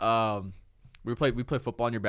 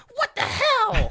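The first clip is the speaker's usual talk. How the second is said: put-on tiny kid's very high little-voice screech; 6 dB louder than usual. Recalling a childhood fight over the ball, the speaker re-enacts screaming in a little voice. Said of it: "in my little voice screaming like".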